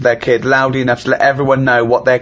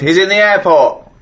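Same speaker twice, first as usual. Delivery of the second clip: angry, deliberate, high, drawn-out fuming shout; 7 semitones higher than usual. Retelling shouting at a man on a phone at the airport: imitating own shout. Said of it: "and I shouted".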